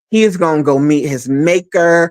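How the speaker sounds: normal talking voice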